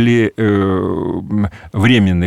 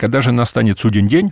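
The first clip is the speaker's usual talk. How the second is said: ordinary talk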